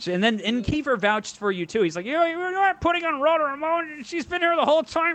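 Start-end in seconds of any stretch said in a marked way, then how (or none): 2.1-5.1 squeaky, way-up, very high-pitched voice. Retelling what a friend said while vouching for a comic: Kiefer impression. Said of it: "That's a really good Kiefer impression".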